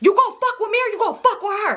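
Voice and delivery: acted-out shrill, very high shrieking scream. Retelling a phone call on speaker, imitating her own screaming. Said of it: "I'm screaming".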